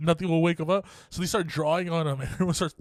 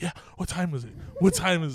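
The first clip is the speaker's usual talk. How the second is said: ordinary talk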